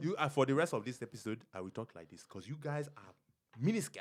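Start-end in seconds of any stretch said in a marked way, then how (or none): 1.5-4.0 fake Greek accent, lower and quieter. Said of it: "We were doing Greek accents".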